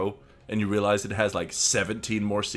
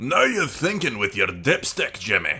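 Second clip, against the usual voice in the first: playful, fun, put-on Scottish brogue; 4 dB louder than usual. A character quoting an old commercial line, in a fun scottish accent. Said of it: "Fun Scottish accent".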